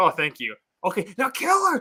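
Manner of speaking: mock panicky, flustered, high, swooping freak-out. Retelling how the imperial governor reacted once it was resolved; imitating someone freaking out. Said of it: "He's just freaking out".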